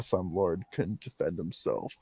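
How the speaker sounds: low, hushed mumble under the breath. Voicing a character's aside to one ally: muttered under breath. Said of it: "mutter under my breath so only Nick can hear".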